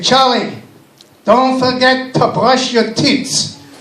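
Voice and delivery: put-on very thick, heavy Yiddish accent. Quoting his grandmother's nightly reminder to him, in a thick Yiddish accent. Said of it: "spoke in a real thick Yiddish accent".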